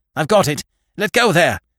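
quick, tense voice. The captain grabs something held out to him across the scum, quick, tense voice. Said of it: "he said in a quick, tense voice".

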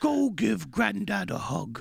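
high, creaky, rough-edged cartoon bear voice. Speaking to little Adeline after she ignored her granddad, Pooh voice. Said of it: "I was doing the Pooh voice already".

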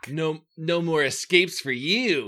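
menacing, snarled delivery. Narrator reading the coach's line as he grabs your wrist, snarling. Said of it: "he snarls".

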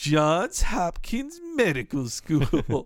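put-on snide, scoffing, disbelieving, swooping sneer. Discussing an episode, quoting Homer's line: retelling Homer's snide sneer. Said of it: "Homer snidely says".

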